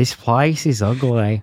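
put-on very slow, drawling South African accent. Redoing the impression corrected: put-on South African accent. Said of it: "that's what Elon Musk sounds like".

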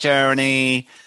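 put-on American accent. Speaker says the word they hate the way they always do, in an American accent. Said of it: "I always say it in an American voice as well".

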